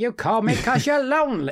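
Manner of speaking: bad put-on voice, very high, squeaky, slow. Quoting the film's phone call at Christmas: bad Tom Hanks impression. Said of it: "That's a bad impression".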